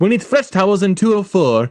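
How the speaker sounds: put-on French accent. Retelling a man's line after he falls through a hotel floor, French accent. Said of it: "that's a French accent".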